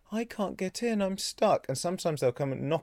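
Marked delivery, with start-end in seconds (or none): 0.1-1.6 put-on pitiful, pleading cat voice, higher. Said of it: "really, like, heartfelt meow".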